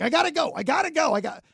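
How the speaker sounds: put-on rapid speech. Retelling a community club president hurrying off, imitating fast talking. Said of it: "she was just like talking really, really fast".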